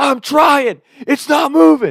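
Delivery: very high, shrill, drawn-out screaming. Retelling how the grandma answered while the car would not speed up: imitating grandma screaming. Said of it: "And she's screaming".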